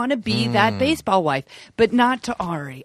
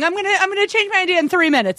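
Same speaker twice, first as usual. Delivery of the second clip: mock high, tearful, weepy sobbing; 8 semitones higher than usual. Retelling what a contestant said while crying: imitating someone crying. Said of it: "crying and going".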